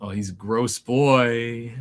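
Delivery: pride in every word. Describing a gross creature oozing green ichor, with parental pride. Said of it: "parental pride you hear in my voice".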